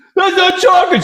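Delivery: put-on very high-pitched screaming child's voice. Retelling Amy's outburst over chocolate at the Dairy Queen: imitating Amy screaming. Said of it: "She's screaming in the in the in the Dairy Queen".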